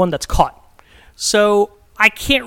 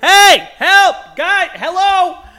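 mock very high, very slow, drawn-out scream; 10 semitones higher, 3 dB louder than usual. Telling a story, act out how you started retelling screaming for help. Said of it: "So I just start screaming".

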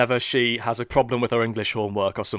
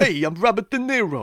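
weak voice, pitched slightly higher; 9 semitones higher than usual. Joking about a pun on an actor's name: weak Robert De Niro impression. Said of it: "my worst impression so far today".

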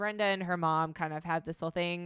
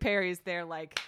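normal talking voice

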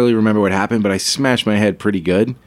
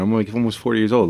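ordinary talk

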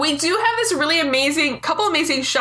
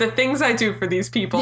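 ordinary talk, nothing marked

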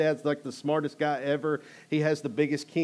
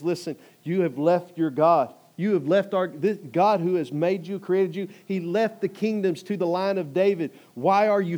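play-acted bold delivery; 3 semitones higher, 4 dB louder than usual. Retelling a king's speech to the opposing king: imitating a bold speech. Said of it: "he acts all bold".

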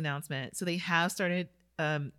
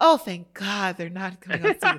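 put-on relieved tone, louder; 9 dB louder than usual. Imagining listeners glad the season stopped: imitating relieved listeners. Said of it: "I had a thought of some listeners like".

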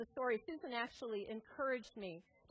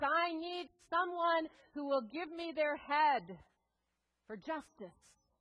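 big, loud, booming voice; 4 semitones higher, 6 dB louder than usual. Telling how Guru Gobind Singh addresses the gathered people: booming voice. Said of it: "comes out in this booming voice".

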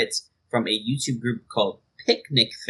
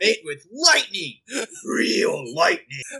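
put-on hyped ad announcer voice, higher pitched; 10 semitones higher than usual. Quoting an energy drink commercial to friends: imitating the Power Thirst commercial. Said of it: "It's like".

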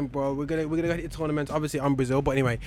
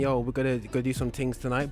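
plain

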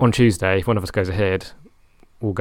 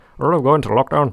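put-on high-pitched, loud Northern Irish accent. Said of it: "Chris in his Northern Irish accent".

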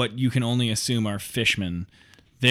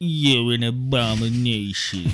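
put-on cartoon dog voice. Voicing fishmen who insult the players: Droopy voice. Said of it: "I love racist droopy".

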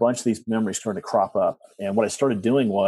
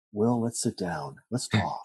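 put-on soft, soothing, calming therapist voice; 6 dB quieter than usual. Imitating a school principal's typical psychologist voice: mock-soothing psychologist voice. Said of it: "he'd do like the typical like psychologist voice".

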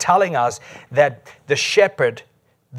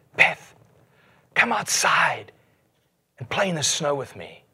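put-on whisper, quieter; 4 dB quieter than usual. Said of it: "Jesus whispered to her and said".

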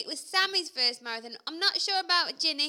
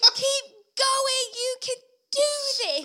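put-on loud shouting, higher in pitch; 10 semitones higher, 3 dB louder than usual. Retelling shouting back to a runner: retelling a loud shout. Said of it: "this is really loud".

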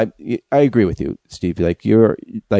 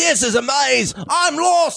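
high, shrill, yelled put-on Australian accent. Performing a comedy bit, yelling in a fake australian accent. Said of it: "I don't know why we're yelling".

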